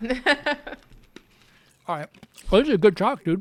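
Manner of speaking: talking while chewing ice. Wrapping up a chat with a podcaster, talking while chewing ice. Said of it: "I'm chewing ice".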